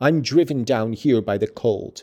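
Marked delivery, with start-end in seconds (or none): none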